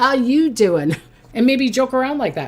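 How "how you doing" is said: playful, joking, cheeky flirty come-on delivery. Showing how to flirt with a crush: Joey from Friends voice.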